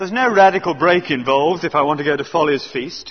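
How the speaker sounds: ordinary delivery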